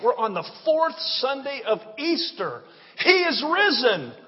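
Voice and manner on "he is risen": eager, enthusiastic, excited, pitched-up delivery. Proclaiming to the congregation on the fourth Sunday of Easter: excited. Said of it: "I'm sorry, I just can't help it".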